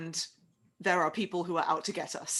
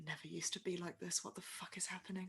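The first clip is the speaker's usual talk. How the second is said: muttered under the breath, much quieter; 16 dB quieter than usual. A character left behind as another walks off, muttering under her breath. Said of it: "Just kind of mutters under her breath".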